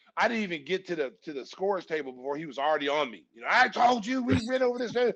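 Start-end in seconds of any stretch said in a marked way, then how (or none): 3.5-5.0 put-on fatherly scolding yell, high-pitched. Retelling being scolded while walking to the bench: imitating someone yelling. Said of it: "Phil's yelling at me".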